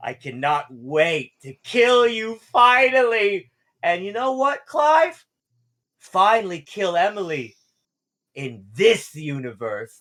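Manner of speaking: loud evil villain voice. Voicing the one who pretended to be Billy, taunting Clive: evil villain voice. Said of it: "I'm just trying to be evil".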